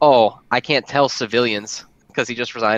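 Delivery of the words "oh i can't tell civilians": acted, slightly sassy, drawn-out. Retelling an anime scene where Makima withholds information: sassy imitation of Makima. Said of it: "a little sassy".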